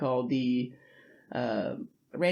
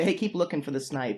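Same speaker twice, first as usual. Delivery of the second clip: usual speaking voice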